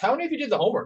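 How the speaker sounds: rhetorical tone, no answer expected. Demonstrating asking students a question they shouldn't answer, rhetorical question tone. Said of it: "notice how I changed my tone to make it more rhetorical".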